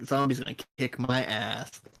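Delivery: ordinary talk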